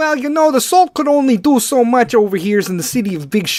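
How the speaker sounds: put-on Chicago accent, loud and high. Imagining asking a guy as a reporter, voicing his answer: Chicago accent. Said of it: "I'm not too bad with the Chicago accent".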